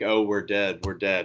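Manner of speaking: ordinary talk, nothing marked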